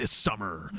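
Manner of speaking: very low, big movie-trailer voiceover voice. Showing what a big voiceover guy sounds like: movie trailer big voice. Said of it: "the voiceovers".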